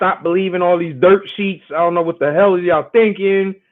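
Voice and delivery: ordinary delivery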